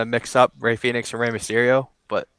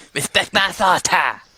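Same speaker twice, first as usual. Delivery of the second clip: put-on cartoon kid voice, higher pitch; 7 semitones higher than usual. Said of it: "I started talking like Cartman almost".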